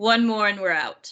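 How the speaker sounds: rough, bassy, deep gruff character voice. Voicing a character at a gambling table: deep, gruff voice. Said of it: "in that similar deep, gruff voice".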